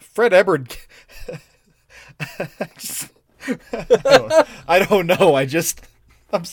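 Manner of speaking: slow, giggly stammer, laughing through the words. Trying to answer while unable to stop laughing: giggling while talking. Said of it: "I got the giggles".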